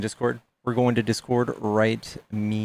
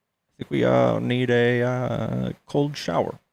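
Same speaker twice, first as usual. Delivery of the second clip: slow, creaky, put-on drawl, dragged out with a croak; 2 semitones higher than usual. Attempting an impression after wishing aloud to do one: Obama impression. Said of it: "I wish I could do an Obama impression".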